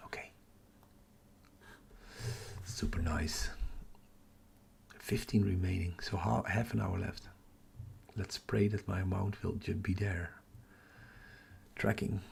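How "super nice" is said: whispering. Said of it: "I'm whispering because everybody's asleep".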